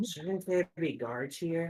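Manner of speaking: quiet half-whispered voice. A player's character looks at Reeve during the scene, half-whispering. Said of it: "I look at Reeve and I whisper".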